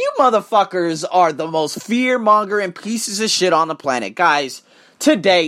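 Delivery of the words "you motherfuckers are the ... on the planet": usual speaking voice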